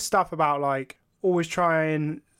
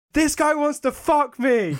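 play-acted, very high shrieking outburst; 11 semitones higher, 4 dB louder than usual. Describing a parody court-transcript video, the speaker acts out someone screaming at the judge. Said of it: "he's like screaming at the judge".

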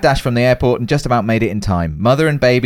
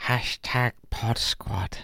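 put-on creature voice, quieter; 13 dB quieter than usual. Asked to say the hashtag as Gollum, the speaker does a Gollum voice. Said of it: "Can you say hashtag Pod Squad as Gollum?".

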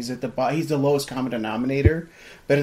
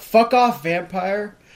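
loud, pitched-up shouted yell; 6 semitones higher, 5 dB louder than usual. Recalling what they yelled out loud at a movie scene, retelling a yell. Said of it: "I yelled out loud".

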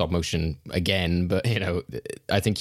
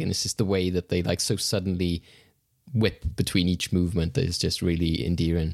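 ordinary talk

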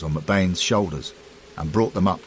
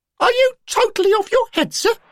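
shrill, very high-pitched raised outburst; 6 dB louder than usual. Narrator reading a story, voicing Derek's reply, in a shrill voice. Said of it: "always the shrill voice of local rivalry".

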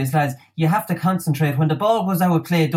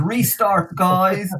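put-on south Dublin accent, much higher; 2 semitones higher than usual. Speaker imagines a restart called out to players, South Dublin accent. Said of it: "in a South Dublin accent".

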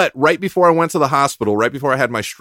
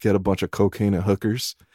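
mock low, flat, expressionless, stone-cold deadpan; 5 semitones lower, 7 dB quieter than usual. Retelling a stranger's answer to a live TV reporter: imitating a deadpan reply. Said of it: "dead face".

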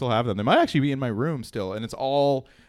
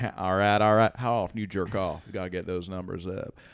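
laid-back Southern drawl, relaxed dude style; 5 semitones lower, 5 dB quieter than usual. Showing how the McConaughey voice differs from Clinton: Matthew McConaughey impression. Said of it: "McConaughey's more like".

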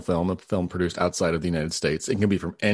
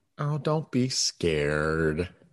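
scary, spooky voice, quieter; 4 dB quieter than usual. A podcast co-host answers a nervous co-host in a scary voice. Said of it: "Your scary voice".

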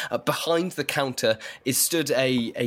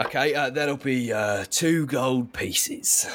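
orc character voice. Voicing the orc shopkeeper telling a customer the price of a crowbar: orc shopkeeper voice. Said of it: "Behind the counter is stood a tall, very burly, grey-skinned orc who has very ornate tusks, one of which is bejeweled. It has a little dangly talisman hanging from it. And he turns to you".

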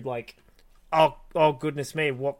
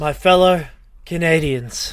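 put-on breathy politician voice, with pauses, louder; 3 semitones higher, 9 dB louder than usual. Imitating how a leader starts every sentence: Justin Trudeau impression, breathy with pauses. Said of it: "Whenever he starts a sentence, he goes".

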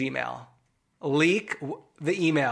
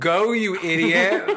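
put-on scream, louder; 5 dB louder than usual. Retelling reacting to a show with another viewer: retelling screaming at the TV. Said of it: "Alex and I are screaming at the T V".

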